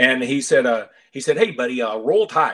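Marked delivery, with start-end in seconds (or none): 1.1-2.5 put-on very distinct, strong Yankee accent. Retelling a stranger at the airport greeting him, in a very distinct Yankee accent. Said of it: "a guy in a very distinct Yankee accent".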